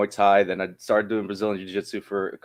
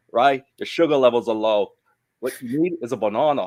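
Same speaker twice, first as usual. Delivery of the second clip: put-on broad Australian accent, laid on thick; 3 semitones higher than usual. Recalling what he said when the speaker was tired, in a thick Australian accent. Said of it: "with his thick Australian accent".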